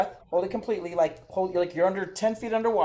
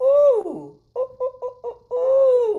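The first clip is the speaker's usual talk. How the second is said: very high, very slow, squeaky drawn-out oohs; 7 dB louder than usual. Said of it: "we wanna be able to squeak the voice".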